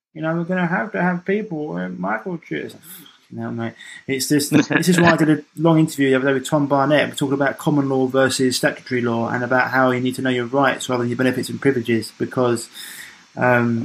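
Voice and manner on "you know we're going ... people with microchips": annoying, grating voice, pitched up and creaky. Quoting Bill Gates to the other speaker: most annoying Bill Gates voice. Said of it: "in his most annoying voice in the world".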